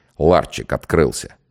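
plain

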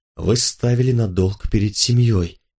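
plain

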